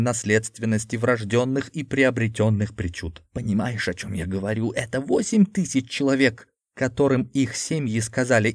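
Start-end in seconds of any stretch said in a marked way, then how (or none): none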